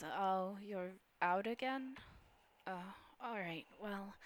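soft, wispy, darker feminine voice.

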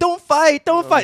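high, whiny, pleading voice.

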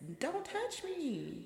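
mock, high, slow, drawn-out delivery.

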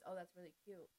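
deadpan, level, flat monotone delivery. Explaining how a compliment comes across in a flat monotone voice. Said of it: "if I say in a monotone voice".

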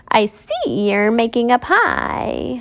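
put-on very slow, rough, gravelly old hag voice. A narrator reads the disguised queen offering an apple, in a gravelly voice. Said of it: "the hag said in a gravelly voice".

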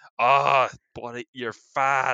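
put-on Boston accent. Describing how a man's accent changed during a rant, put-on boston accent. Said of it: "saying it with a Boston accent".

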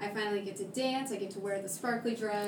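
ordinary talk, nothing marked

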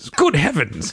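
silly, high-pitched put-on English accent. Podcaster recalling how the show's name came about, silly english accent voice. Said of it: "it was just me being silly voices".

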